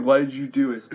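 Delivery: ordinary delivery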